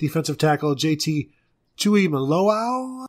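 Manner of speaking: Tuimoloau ending on a rising, questioning upward lilt. Saying a player's name to another speaker, voice rising at the end. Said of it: "you said it with your voice going up at the end".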